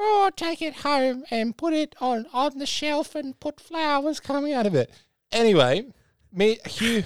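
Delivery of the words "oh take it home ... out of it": put-on grandma voice, pitched very high. Telling a story about grandma at a garage sale, imitating grandma's voice. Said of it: "That's more like my grandma's voice".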